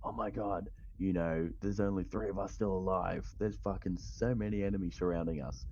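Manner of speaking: ordinary delivery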